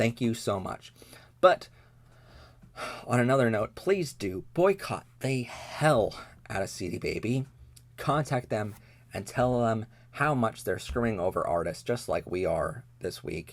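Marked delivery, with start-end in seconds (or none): 0.0-0.9 sarcasm laid on as thick as possible. Complaining about a company treating customers badly: extremely sarcastic. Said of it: "the most sarcastic way possible".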